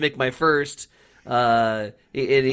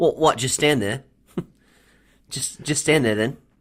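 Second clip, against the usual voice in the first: put-on Australian accent. Retelling a coach imitating a punter in an Aussie accent. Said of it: "makes this beautiful impersonation".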